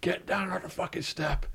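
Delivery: hushed, whispered yell. Retelling how guards yelled at a prisoner on the van step: imitating guards yelling. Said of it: "the guards yelling".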